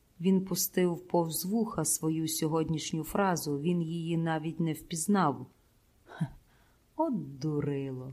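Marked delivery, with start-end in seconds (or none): 7.0-8.1 gentle, affectionate, tender voice, low and hushed. Narrator reading, a woman speaks to a man: tender. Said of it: "лагідно сказала Луїза своїм неймовірним голосом".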